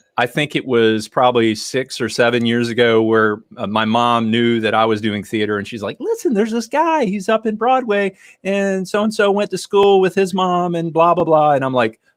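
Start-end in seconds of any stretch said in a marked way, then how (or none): 6.0-11.5 pitched way up, very high voice. Retelling a conversation with mom: imitating mom's voice, not doing it justice. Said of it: "I'm not doing my mom's voice justice".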